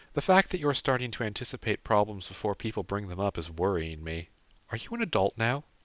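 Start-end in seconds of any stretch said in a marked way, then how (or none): none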